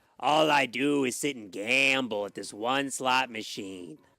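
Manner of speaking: put-on Las Vegas chain-smoker voice. Joking about a failed ghoul voice, putting on a Las Vegas chain smoker voice. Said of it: "more of a, a chain smoker from, like, Las Vegas".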